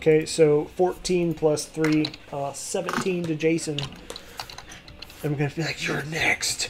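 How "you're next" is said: frothing at the mouth, saliva everywhere, quieter. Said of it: "just frothing and just saliva everywhere".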